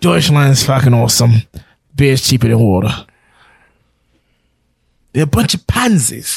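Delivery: mean-spirited, scornful, nasty, heavily mean voice. Told the first attempt wasn't as mean as Roy, the speaker tries a meaner Roy impression. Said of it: "it wasn't as mean as Roy".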